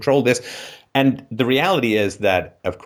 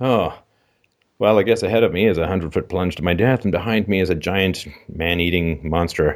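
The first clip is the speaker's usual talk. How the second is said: mock-bored, much lower, stifling a yawn; 3 semitones lower than usual. Retelling how an older actor delivered his line, mock-bored, stifling a yawn. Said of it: "the older actor was like stifling a yawn".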